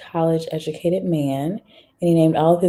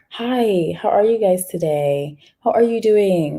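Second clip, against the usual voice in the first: proper, formal, polite office-style voice; 3 semitones higher than usual. Showing code switching by word usage: formal polite greeting voice. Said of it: "Or I could be like".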